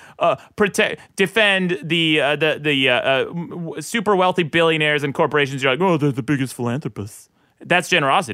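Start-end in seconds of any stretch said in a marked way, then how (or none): 5.8-7.3 fancy-sounding, low-pitched posh voice. Imitating the other speaker defending billionaires: fancy Dick impression. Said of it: "That was the fancy Dick impression".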